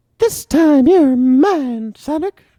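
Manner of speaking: squeaky high voice with the word "mine" stretched out. Trying out a voice after asking to have a go, sounding like Mickey Mouse. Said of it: "that still kind of sounded like a Mickey Mouse".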